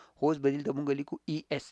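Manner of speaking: plain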